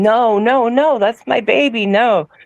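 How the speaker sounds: desperate, pleading, begging delivery. Recalling when he grabbed her and ran off, the speaker retells their own begging. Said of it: "And I was begging".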